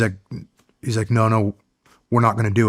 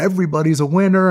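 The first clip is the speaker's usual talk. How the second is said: big, high-pitched, carrying yell; 8 semitones higher than usual. Retelling what Mark yelled at blackjack when the dealer busts: imitating Mark yelling. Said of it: "he'd yell out".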